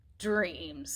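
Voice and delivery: contemptuous. A mouse answers a traveller who speaks of dreams: scornful. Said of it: "the fat mouse said scornfully".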